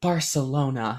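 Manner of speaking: whispered. Retelling a movie scene where a character says a city name: imitating a whisper. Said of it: "she just whispers it".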